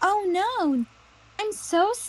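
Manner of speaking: exaggerated, very high-pitched fake sad voice. Explaining exaggerated Disney acting, demonstrating it: fake sad Disney-acting voice. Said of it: "right now I'm pretending to have a sad voice".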